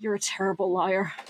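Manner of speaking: very shaky, quavering, trembling, unsteady voice. Narrator voicing Orion answering another character, very shaky voice. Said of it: "you just hear him very shakily say".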